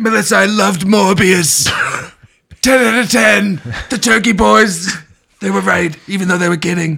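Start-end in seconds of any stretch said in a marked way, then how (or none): 0.0-3.6 put-on gossipy comedian voice, higher and louder. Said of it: "We both just wanna do the Joan Rivers voice".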